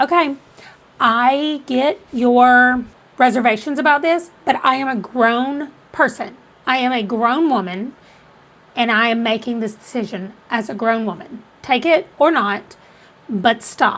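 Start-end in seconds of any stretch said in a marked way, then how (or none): none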